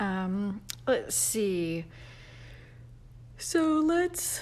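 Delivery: words spoken through a yawn. Greeting people who have joined, on a sleepy day: yawning. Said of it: "I'm sorry, I'm yawning".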